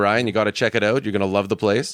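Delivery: ordinary delivery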